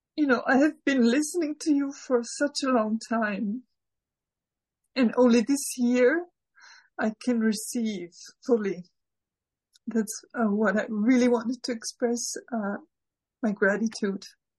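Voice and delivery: speaking through tears. Speaker expresses gratitude to someone they've listened to for years, crying. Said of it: "I'm sorry, I'm crying already".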